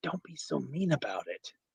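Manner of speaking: loud stage whisper. Voicing a character who looks at another character and speaks: loud whisper. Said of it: "Whispering very loudly".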